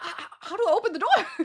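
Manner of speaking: put-on flustered panic, high, stammering and stumbling. Retelling asking how to open a door while stuck inside: retelling own panicked question. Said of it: "I was panicking".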